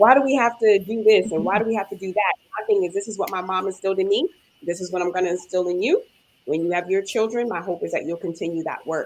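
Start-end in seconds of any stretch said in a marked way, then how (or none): 0.0-2.3 put-on loud, complaining, protesting kid voice. Retelling what the kids say when they complain: imitating kids complaining. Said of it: "our kids always complain about".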